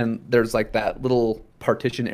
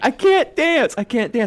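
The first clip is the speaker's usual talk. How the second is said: put-on, shrill, very high, repeated wailing screaming; 14 semitones higher, 4 dB louder than usual. Speaker retells a traumatized girl after she was pulled out, imitating her screaming. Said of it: "She just kept screaming".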